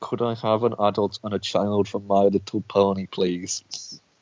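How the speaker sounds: slow, forced out through clenched, gritted teeth. Imitating the other speaker ordering cinema tickets: mock speaking through gritted teeth. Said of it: "You're gonna say that through such fucking gritted teeth".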